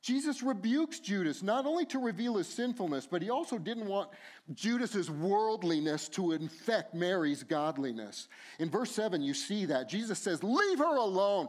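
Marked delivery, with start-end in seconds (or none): 10.4-11.5 loud, raised, scolding voice. Reading Jesus's rebuke of Judas in the text: raised voice. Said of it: "I'm raising my voice because that's the sense of the text".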